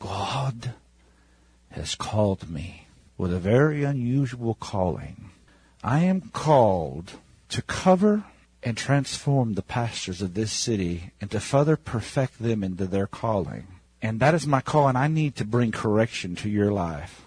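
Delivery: deep, hushed, meditative tone. Retelling a woman's words in a meeting she asked for: deep meditational voice. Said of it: "She gets in this deep meditational voice".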